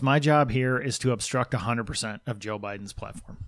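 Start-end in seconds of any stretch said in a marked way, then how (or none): none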